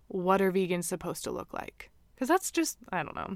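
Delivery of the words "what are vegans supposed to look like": mock deadpan, play-acted dry, cheeky, sassy tone. Acting out her reply to someone saying she doesn't look vegan, mock deadpan sassy retort. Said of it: "in a very deadpan stare".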